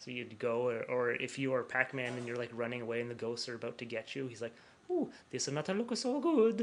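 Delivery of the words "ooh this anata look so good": very high, sing-song, swooping game-announcer cartoon voice. Imitating an announcer who does Mario's voice in a game: imitating Charles doing Mario's voice. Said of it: "he does the voice of Mario".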